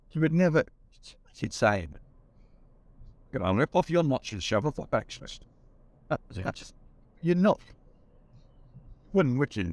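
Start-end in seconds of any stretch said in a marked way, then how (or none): 3.4-5.5 put-on Scottish film-star voice. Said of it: "in a Sean Connery type voice".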